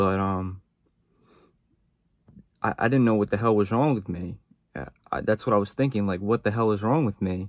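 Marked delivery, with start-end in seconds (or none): 0.0-4.4 on the verge of crying. Speaker finding a hard time difficult to talk about, teary voice. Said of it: "my eyes are almost, like, watering".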